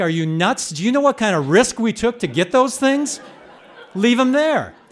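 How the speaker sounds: loud hollered yell, pitch climbing. Retelling a rough boat ride through loud surf: imitating someone yelling. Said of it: "And he yells back".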